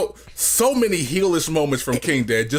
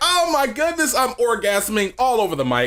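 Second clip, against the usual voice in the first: acted-out, wildly thrilled, high, gushing enthusiasm; 7 semitones higher than usual. Retelling how a crew member sounded last show: imitating Danny's enthusiasm. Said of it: "you were like".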